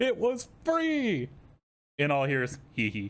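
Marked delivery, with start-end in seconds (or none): 0.0-1.3 put-on shrill, very high, exasperated screaming outburst. Retelling her own words in an argument across two streams: retelling a scream. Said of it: "And I'm screaming".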